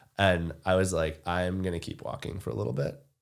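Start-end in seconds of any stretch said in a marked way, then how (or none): 1.3-3.0 plainly said with rising intonation. Retelling own reply at the truck when asked what is needed: imitating own flat monotone. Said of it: "have this real monotone".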